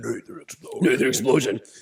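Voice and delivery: very low, deep voice, as low as possible. Doing the band members' voices one by one: very low Nathan Explosion voice. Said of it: "Nathan's all the way down here".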